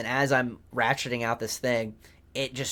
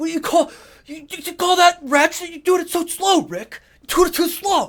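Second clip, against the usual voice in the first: play-acted loud angry cussing rant, very high-pitched; 8 dB louder than usual. Retelling his dad watching him ratchet a bolt, imitating dad cussing angrily. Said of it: "he was like cussing me".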